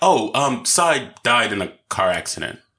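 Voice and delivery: normal talking voice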